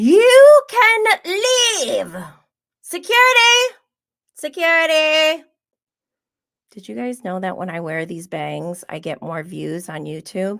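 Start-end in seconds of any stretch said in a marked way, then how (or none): 0.0-5.4 very high, loud, stretched-out drawn calls. Reading a viewer's comment, speaker answers in a best Meredith Marks voice. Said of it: "Let me put on my Meredith bangs".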